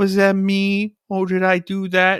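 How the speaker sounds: put-on uncomfortable dumb baby voice.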